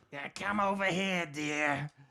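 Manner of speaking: miserable, high-pitched, loud gargoyle-woman voice. Describing a woman the speaker walked behind down a hallway, imitating her voice. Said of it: "ugly woman with a voice like".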